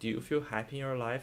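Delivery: ordinary delivery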